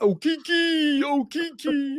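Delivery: very high, very slow, drawn-out hollering. Imitating an announcer who will start shouting: imitating Bill Walton shouting. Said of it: "He'll just start shouting".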